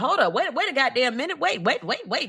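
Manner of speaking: acted flustered alarm. Retelling a suspect hearing he is accused: imitating sudden panic. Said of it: "That knocked the cool clean out of his ass".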